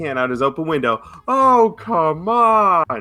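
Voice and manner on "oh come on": very high, fed-up holler, "on" stretched. Retelling how a man five cars back yelled out his window: imitating a man yelling. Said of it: "yells as loud as his can".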